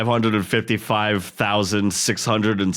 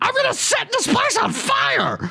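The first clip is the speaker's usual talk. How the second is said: very high cartoon voice with wildly swinging pitch. Imagining a mascot threatening to burn the place: voice like the shrimp from Shark Tale. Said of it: "You sound like that shrimp from".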